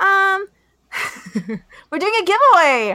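exaggerated excitement.

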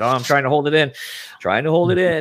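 mock near-tears voice, on the verge of crying. Retelling a moment from an intro: imitating Marin on the verge of tears. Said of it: "on the verge of tears".

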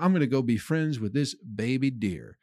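ordinary talk

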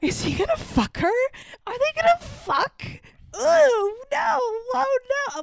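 put-on very high, climbing, rising screams. Retelling screaming at the tv during a scene: retelling screaming at the tv. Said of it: "I proceed to scream at the T V".

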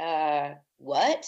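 mock-puzzled what. Retelling being four when her grandfather asked about alive and dead, acting out a confused reply. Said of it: "And I'm like".

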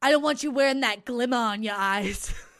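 put-on thick Boston accent, loud. Riffing on how the word glimma sounds, doing a heavy Boston accent. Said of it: "someone with a heavy Boston accent".

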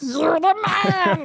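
high, slow, shouted cartoon catchphrase voice.

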